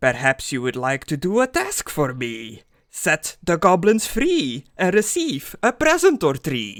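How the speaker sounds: impish, grinning, swooping goblin voice. Storyteller voicing a goblin offering the players a task, in a grinning goblin voice. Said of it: "a grinning goblin face".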